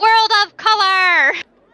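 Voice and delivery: shrill, very loud, high-pitched shouted yell. Playing a magic character in a game, casting a spell, yelling a spell. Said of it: "I am yelling".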